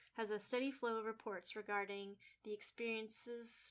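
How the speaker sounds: usual speaking voice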